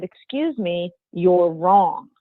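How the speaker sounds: slow, measured, deliberate, unhurried delivery. Retelling correcting a man who was wrong, very loud. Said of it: "So I very loudly said".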